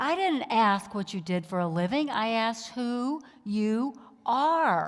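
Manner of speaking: big booming voice. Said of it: "this big booming voice".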